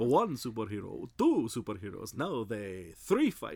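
crazy, manic vampire puppet voice. Recalling a Batman and Superman bit where he turns into the Count: the Count voice. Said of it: "he turns into the Count".

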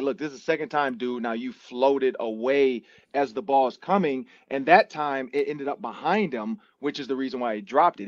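ordinary delivery

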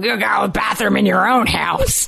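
mock tough-guy movie voice. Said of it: "Vincent D'Onofrio".

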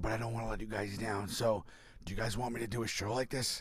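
barely-there, voiceless, lost-voice talking. Retelling what was said onstage after losing the voice: imitating a lost voice. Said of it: "I was literally talking like this on the mic".

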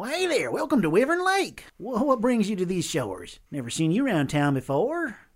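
very friendly voice, high and swooping. Voicing a fisherman in a boat greeting the party: friendly fisherman greeting. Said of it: "he waves and greets you all very friendly".

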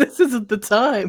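high, slow laughing through the words.

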